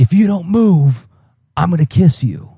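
put-on jolly, booming, high, cheerful shout. Recalling a woman who shouted at them as a small child: imitating a cheerful loud shout. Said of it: "says very loudly, not angrily, like this very cheerful loudness".

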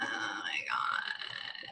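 near-whispered, very quiet, breathy, soft vocal fry. A speaker shows a co-speaker who didn't know the term: Kim Kardashian vocal fry. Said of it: "trying really hard not to have vocal fry".

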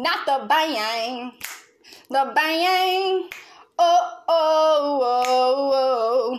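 very slow, with each oh drawn out. Demonstrating a favorite TikTok for the audience: imitating a TikTok video. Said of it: "I'm gonna demonstrate".

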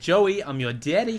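very loud bad Australian accent. Joking about nicknames for Joey, speaker tries a bad Australian accent. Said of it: "That was not an Australian accent".

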